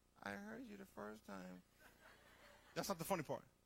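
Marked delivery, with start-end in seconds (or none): 0.2-1.6 tiny, very quiet, hushed, creaky, croaky voice. Telling a joke, the voice from the box answers, tiny Fred voice. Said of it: "this little tiny voice comes out of the box".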